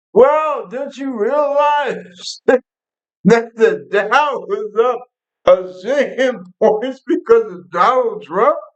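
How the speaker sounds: high, drawn-out screaming, shouting rant. Mocking how the Attorney General answered a simple question: imitating Bondi yelling and screaming. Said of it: "basically yelling and screaming".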